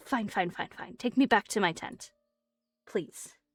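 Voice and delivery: reluctant, grudging tone. Narrating a character who grabs your jacket sleeve: reluctant giving in. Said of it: "she will grab on to like your jacket sleeve and she goes".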